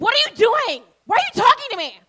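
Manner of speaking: high, loud, aggressive yell.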